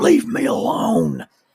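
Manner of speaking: mock raspy, rough, high scream. Retelling a man screaming at the speaker through a door, retelling a scream. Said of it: "he screams through the door".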